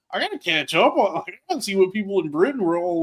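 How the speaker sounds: ordinary delivery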